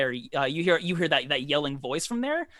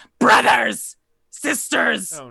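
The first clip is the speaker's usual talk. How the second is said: shrieking, higher and louder; 8 semitones higher, 8 dB louder than usual. Voicing a creature hit by a firebolt, calling her kin: screaming. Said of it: "she screams out and says".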